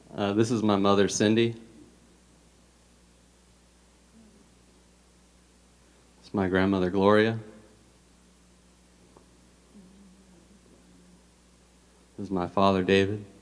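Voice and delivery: speaking through tears. Introducing his family to the church before his testimony, crying while talking. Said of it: "Didn't even get to talk yet before I started crying".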